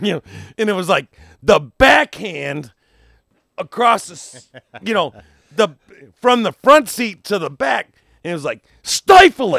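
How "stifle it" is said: woman's loud, high-pitched yell. Retelling a woman yelling from the front seat to the back, imitating a woman yelling. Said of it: "she would just yell".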